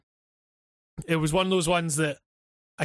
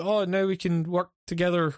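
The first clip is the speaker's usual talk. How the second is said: ordinary delivery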